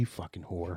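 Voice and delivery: put-on whisper. Imagining a twin whispering in her sister's ear: imitating someone whispering. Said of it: "whispering in her ear".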